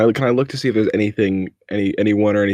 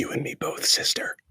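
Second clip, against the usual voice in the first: barely audible, very soft, breathy whisper. Hiding in a crevasse, answering a shushing old woman: whispering very softly. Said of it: "I'm gonna whisper very softly".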